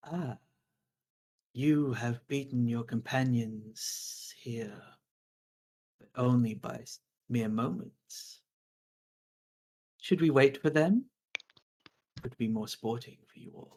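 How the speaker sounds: soft, sibilant, hissing, sing-song creature voice. A game master voices a Medusa addressing the players' characters, hissing, lilting Medusa voice. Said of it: "hissing, lilting voice, it says".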